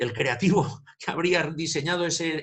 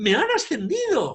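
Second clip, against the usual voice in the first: put-on delighted, joyful girl's voice, pitched very high; 9 semitones higher, 4 dB louder than usual. Retelling an example, doing a girl's voice: imitating a joyful girl. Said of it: "yo trato de imitar lógicamente la voz de una chica diciendo eso".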